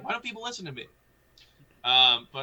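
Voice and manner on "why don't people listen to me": put-on cocky voice, pitched higher. Retelling what Ambi says when right: imitating Ambi. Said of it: "he's just like".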